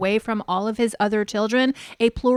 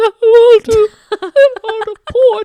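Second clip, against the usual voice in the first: acted-out shrill, very loud, very high blubbering; 12 semitones higher, 12 dB louder than usual. Retelling a wife sitting alone on a bench: imitating Robin crying. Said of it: "And then we go back to Robin".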